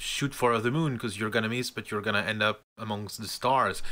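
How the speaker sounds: plain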